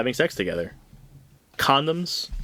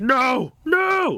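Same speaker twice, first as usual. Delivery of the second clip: frantic, very high and loud. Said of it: "flipping out".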